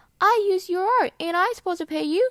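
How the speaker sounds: put-on robotic chatbot voice. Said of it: "they talk like an A I bot".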